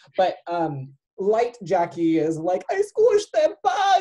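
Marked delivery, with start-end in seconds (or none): 2.7-4.0 very high, loud, sobbing, crying wail. Retelling an episode scene as light Jackie: imitating Jackie crying.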